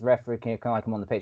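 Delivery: normal talking voice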